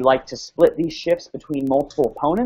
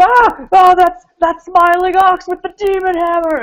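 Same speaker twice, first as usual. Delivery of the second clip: mock shrill, very loud, very high panicked scream; 9 dB louder than usual. Voicing enemies diving away from a hammer blow: screaming in panic.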